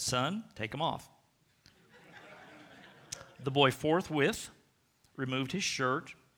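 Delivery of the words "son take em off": ordinary talk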